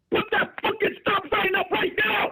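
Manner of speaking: mock aggressive yelling. Acting out a street sweeper yelling at someone, do mock aggressive yelling. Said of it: "but you yelling and say that shit".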